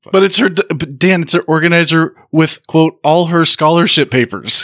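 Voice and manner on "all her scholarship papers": usual speaking voice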